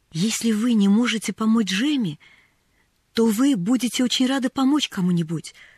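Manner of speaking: timid and shy voice. Answering a woman who refuses, a girl begins timidly. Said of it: "робко начала Поллианна".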